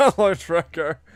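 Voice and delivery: voice cracking partway through a word. Greeting a viewer while testing the stream audio, voice cracking. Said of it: "my voice cracked there".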